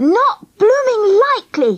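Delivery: high, mad, angry, flat-out shout. The narrator refuses when the other speaker begs him to take her back, shouted. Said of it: "I shouted".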